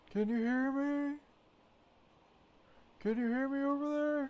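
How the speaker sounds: very high, carrying shout as if across distance. Calling out to someone far off in the game who doesn't answer: shouting to someone far away. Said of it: "in case you just think I'm screaming to myself".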